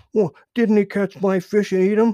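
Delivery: very high, shrill, loud, snapped. Little Joe answers Grandfather Frog about Buster Bear, snapping. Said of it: "snapped Little Joe".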